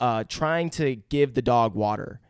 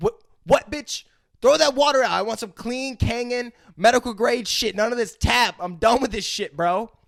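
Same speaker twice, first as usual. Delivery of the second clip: put-on, very high, furious ranting dog voice; 10 semitones higher than usual. Retelling a movie scene, voicing the dog: imitating a pissed-off dog. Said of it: "the dog's, like, fucking pissed off".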